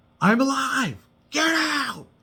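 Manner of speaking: high, loud scream at top of lungs. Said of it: "at the top of her lungs".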